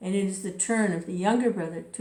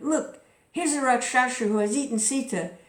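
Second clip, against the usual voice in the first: high, wild, furious, angry outcry; 5 semitones higher, 3 dB louder than usual. Reading a tale aloud, a hero accuses a creature: angry cry. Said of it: "wild with anger cried".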